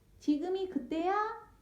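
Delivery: eager, high-pitched, excited, bouncing shout. Reading a story aloud, a character hops up and down, shouting while jumping. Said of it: "팔짝팔짝 뛰면서 소리쳤어요".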